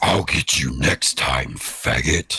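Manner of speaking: very low, deep put-on voice. Performing a line after being asked to: Doctor Claw voice. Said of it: "my Doctor Claw voice".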